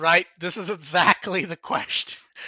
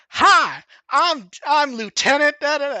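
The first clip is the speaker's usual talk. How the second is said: put-on heavy, thick, dubbed Southern accent, very slow drawl; 7 semitones higher, 4 dB louder than usual. Describing a movie scene where the Terminator is dubbed over, thick Southern dubbed voice. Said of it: "dubbed him over as with like a thick Southern voice".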